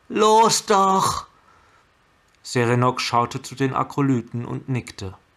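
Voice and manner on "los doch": very high, loud, begging plea. While the trapped beast shrieks, urging the monks to act now, pleading. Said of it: "flehte Chandra".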